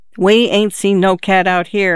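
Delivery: ordinary delivery, nothing marked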